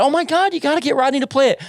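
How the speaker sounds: very high, fast, excited gushing.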